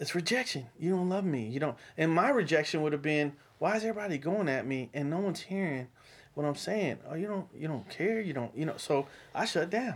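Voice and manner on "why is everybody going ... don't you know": ordinary delivery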